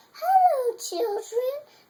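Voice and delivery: sweet, very high voice. Reading a story aloud, someone greets the children in a sweet voice. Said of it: "someone said in a sweet voice".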